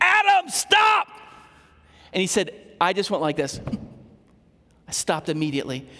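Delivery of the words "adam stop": mock, very high, loud shouted yell. Retelling how his dad shouted at him as he ran toward the road: retelling Dad's yell. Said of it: "my dad just yelled at me".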